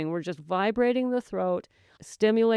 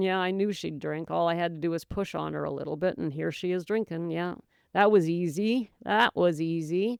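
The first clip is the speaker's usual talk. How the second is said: normal talking voice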